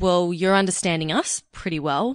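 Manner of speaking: normal talking voice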